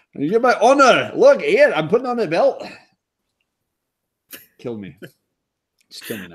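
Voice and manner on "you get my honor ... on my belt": put-on Scottish accent, higher. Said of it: "My Scottish accent".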